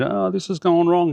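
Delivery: very high-pitched, panicked, acted-out cry. Retelling ringing up for help when something went wrong: imitating own panic. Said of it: "me panicking on one end".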